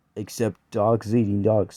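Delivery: plain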